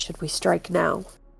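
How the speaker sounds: hushed whisper. A player whispers to their party in character, whispering. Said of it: "but I'll whisper to my party".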